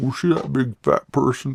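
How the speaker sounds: deliberately bad put-on movie-villain voice. Showing a movie line from Silence of the Lambs: bad Silence of the Lambs impression. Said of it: "My impressions are not good".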